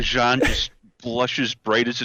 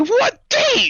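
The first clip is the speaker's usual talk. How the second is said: shrill, very high, loud scream; 5 dB louder than usual. Retelling a scene where Luca reacts: imitating Luca screaming. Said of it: "And Luca just screams".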